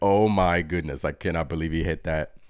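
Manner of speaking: usual speaking voice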